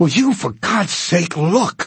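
fury forced back down. Pointing at the window, a man demands that someone look, repressed rage. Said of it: "trying to repress the blinding rage".

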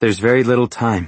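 ordinary delivery

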